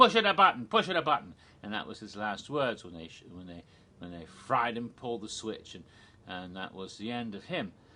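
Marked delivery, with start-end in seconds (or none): 0.0-1.3 put-on Italian accent yell, much higher, louder. Retelling a condemned man's last words shouted from the chair, retold shout, Chico Marx accent. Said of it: "like Chico Marx or somebody".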